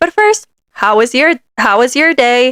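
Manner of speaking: mechanical, programmed-sounding robot voice. Retelling a phone call with a store agent: imitating a robotic-sounding voice. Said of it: "But she says it so robotic".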